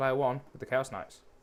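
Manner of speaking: normal talking voice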